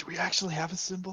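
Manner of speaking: whispering in character. Asking another player's character a secret question: whispering in character. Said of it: "I whisper at Reese".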